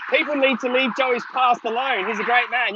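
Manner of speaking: ordinary talk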